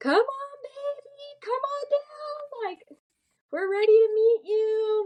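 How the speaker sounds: put-on very high, slow, coaxing, laughing through words. Retelling urging the baby to come out: retelling own hysterical laughing. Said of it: "I am laughing hysterically".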